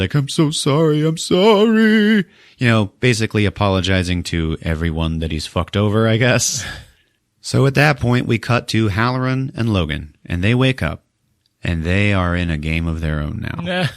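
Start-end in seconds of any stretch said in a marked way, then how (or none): 0.1-2.2 mock crying, very high-pitched, slow and drawn-out. Recapping a story, acting out Ryan's words as he looks at Anna's body: imitating Ryan crying. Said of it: "And he's crying".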